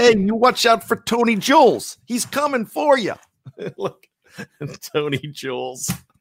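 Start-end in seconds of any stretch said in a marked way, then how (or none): 0.0-3.1 very high, clumsy fake Italian accent. Half-Italian speaker doing a voice: bad put-on Italian accent. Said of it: "my Italian accent's not even good".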